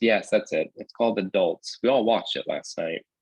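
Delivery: ordinary delivery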